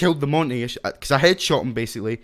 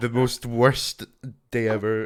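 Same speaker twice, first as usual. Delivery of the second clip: most worst stretched slowly. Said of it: "My grammar is leaving me".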